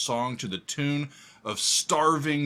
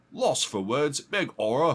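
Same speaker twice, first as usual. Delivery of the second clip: shaky, bad, put-on Cockney accent; 3 semitones higher than usual. Saying a book title as a Cockney speaker would, in a put-on Cockney accent. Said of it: "Sorry for those with Cockney accents. I don't quite have it down yet".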